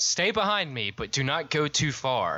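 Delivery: urgent called-out voice. Playing a character, calling to a companion who is far away, yelling a warning. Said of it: "I yell to Velma".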